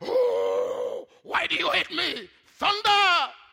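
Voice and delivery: booming God voice, high and loud.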